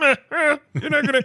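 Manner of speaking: very high, squeaky, put-on cartoonish character voice. Retelling Pee-wee's reply when someone says he wants his bike: Pee-wee voice. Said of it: "I'm not gonna do the voice anymore".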